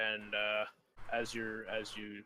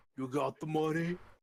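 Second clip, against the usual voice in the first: loud, pitched-up, big lumbering fat man voice; 6 semitones higher, 6 dB louder than usual. Narrator voicing a man who lumbers out of another room; very fat man's voice. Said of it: "Let me do the voice properly".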